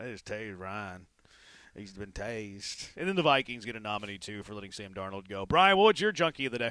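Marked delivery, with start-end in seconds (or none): 0.0-1.1 very soft, quiet, hushed southern drawl. Repeating a broadcaster's call after praising it: imitating a southern drawl. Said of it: "I love his southern drawl".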